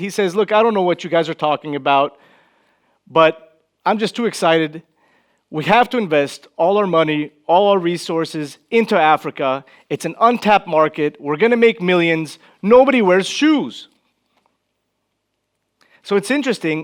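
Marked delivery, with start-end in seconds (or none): none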